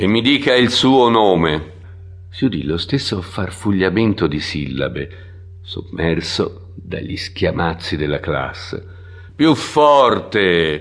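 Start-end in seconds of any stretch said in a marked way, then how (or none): 9.3-10.8 loud shouting, yelling. The teacher shouts at the new student, who mumbled his name. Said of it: "gridò l'insegnante".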